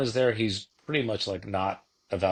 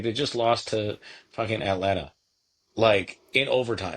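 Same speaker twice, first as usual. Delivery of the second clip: plain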